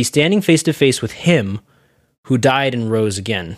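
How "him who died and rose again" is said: ordinary talk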